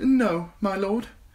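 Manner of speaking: thin nervous voice. A narrator reads a character's reply to a high officer, in a thin, nervous voice. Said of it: "Sam replied in a thin, nervous voice".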